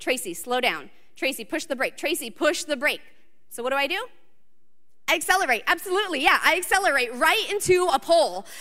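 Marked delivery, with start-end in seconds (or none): none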